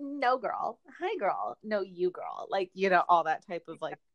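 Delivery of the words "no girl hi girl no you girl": very slow, sing-song, drawn-out, fake-sweet girl voice. Imitating the fake, friendly confrontations between the women: mocking fake-nice girl talk. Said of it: "the fake, like".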